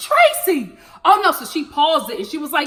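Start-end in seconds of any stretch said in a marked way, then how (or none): 0.0-0.8 anguished, high, dismayed yell-scream. Retelling a younger sister's reaction from the living room: imitating sister screaming. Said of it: "she is literally in the living room screaming".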